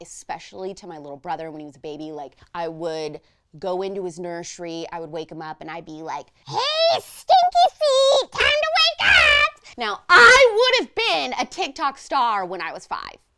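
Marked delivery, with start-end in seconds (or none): 6.5-9.8 very high pitch, slow, stretched doll voice. Retelling waking a baby brother in his nursery: imitating Jasper the doll voice. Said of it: "I'm doing a voice like that".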